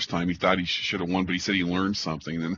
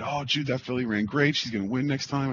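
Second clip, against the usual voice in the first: all excited, eager enthusing, pitched up; 5 semitones higher than usual. Retelling watching a race replay, the speaker quotes an agent: retelling someone excited. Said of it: "Ray's all excited".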